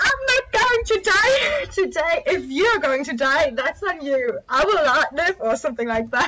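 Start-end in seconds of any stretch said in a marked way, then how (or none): 0.0-5.4 high, raised scream. Speaker retells jumping out of a tuk-tuk and what they screamed: retelling a scream. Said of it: "I screamed".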